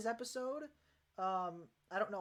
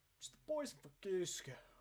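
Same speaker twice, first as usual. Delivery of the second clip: breathy, hushed, half-whispered character voice; 5 dB quieter than usual. Showing how to mold the face for a voice impression: Patrick Warburton voice. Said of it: "like Patrick Warburton".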